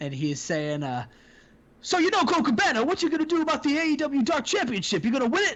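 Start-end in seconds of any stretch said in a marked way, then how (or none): 1.8-5.6 pitched-up put-on commentator voice. Quoting what Taz is saying about a championship, Taz impression. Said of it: "That's my that's my Taz impression".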